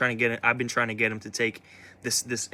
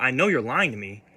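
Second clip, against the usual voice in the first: put-on stern voice.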